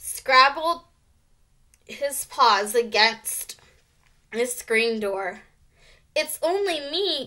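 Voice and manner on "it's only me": tiny, high, squeaky little mouse voice. Narrator reads a character's reply that no one could hear, squeaking. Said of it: "squeaked Ralph".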